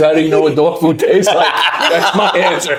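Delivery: high, loud, laughing delivery.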